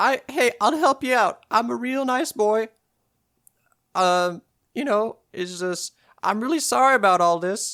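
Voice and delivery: put-on very high, loud, rascally young boy voice. In a role-play, a boy found on a pirate's ship answers the pirate, young scallywag boy voice. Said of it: "a wee scallywag young boy rascal".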